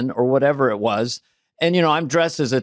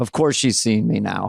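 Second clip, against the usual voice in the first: imitated, lower, muttered under the breath; 5 semitones lower than usual. Retelling how a visitor reacted on arrival: imitating someone muttering under her breath. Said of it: "kind of under her breath".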